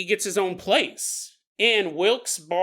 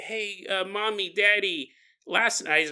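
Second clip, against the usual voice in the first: put-on talking in a child's voice; 4 dB quieter than usual. Retelling what a boy told his parents: kid voice. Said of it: "I talk like a kid".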